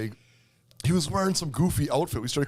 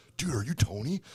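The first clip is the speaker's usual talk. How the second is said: put-on hesitant, shy, timid kids' voices, quiet, up close; 4 dB quieter than usual. Retelling how kids walked up at a party fire: imitating timid kids. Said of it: "kids walk up all timid".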